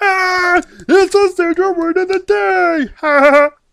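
very high, squeaky, loud, slow, drawn-out squeal. Showing listeners who the character is with an impression you love doing, Pee-wee Herman impression. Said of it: "I love doing that impression".

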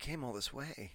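mock barely audible murmur, aching with heartbreak. Recounting an actor's scene, imitating Pedro Pascal heartbroken. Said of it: "You could hear it in his voice".

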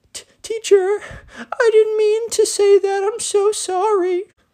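put-on very high, slow, tearful, stammering child's voice. Retelling a spoiled kid apologizing to a teacher: imitating a kid tearing up. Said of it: "the spoiled kid starts to tear up a little bit".

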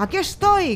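yelling at high pitch. Narrator reads the captain calling out while sinking in the swamp, shouted. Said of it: "gritó Morgan semi hundido".

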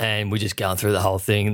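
usual speaking voice

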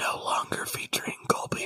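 quiet hushed voice. Joking about long album titles, adding one more whisper. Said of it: "one more whisper".

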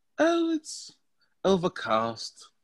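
put-on British accent, played up hard, swooping. Asked a couple of random questions, answering in a British accent. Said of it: "you gotta relax with that accent".

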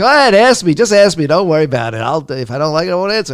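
insistent, urging, high pitch, loud.

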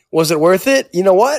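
ordinary delivery

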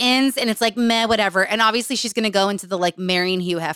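ordinary delivery

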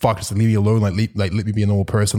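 ordinary talk

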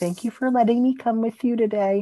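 gentle, loving tone lifted up high. Recapping a scene between Bette and Tina, imitating Bette's softest voice. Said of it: "Bette has the softest Tina voice".

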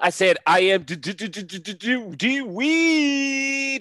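high, loud, stuttered hype-man voice.

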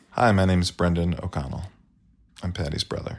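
sad-sounding voice. Brother introduces himself when asked, sounding sad. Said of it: "You sound so sad".

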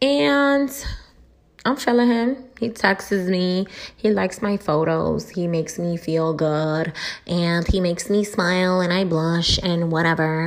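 mocking put-on voice. Speaker mocking how the audience talks, imitating how y'all sound. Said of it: "I'm using that voice because that's what the fuck y'all be sounding like".

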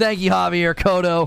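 loud, full-throated celebratory hype shout. Thanking a donor by name after announcing the donation: yelling. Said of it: "I've not gotten to yell that".

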